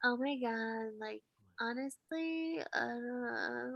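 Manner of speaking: very quiet mumble, mouth nearly shut, not dragged out. Mocking how Euphoria teens talk, the speaker imitates Cassie, mouth barely open. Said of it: "talk like they can't open their mouth all the way".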